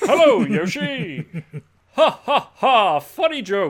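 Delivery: announcer style, loud and high. Guessing how the announcer talks, imitating the announcer's voice. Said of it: "Does he talk like this?".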